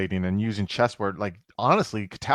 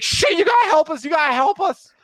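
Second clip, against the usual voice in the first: frantic, very high, loud panicked pleading voice; 7 dB louder than usual. Voicing Carlos on the phone while being shot at: panicked Carlos voice. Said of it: "you realize it's the voice of Carlos".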